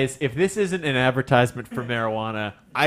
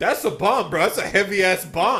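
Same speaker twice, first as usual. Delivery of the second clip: put-on goon voice, higher; 7 semitones higher than usual. Imitating airport security staff about the console: Goomba voice. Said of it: "I love your Goomba voice".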